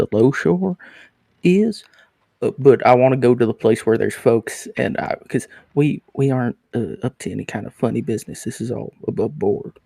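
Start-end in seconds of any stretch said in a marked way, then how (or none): 0.0-1.8 hushed whispering voice, higher pitch. Voicing a character leaning in to the captain: whispering. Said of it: "he leans in and whispers".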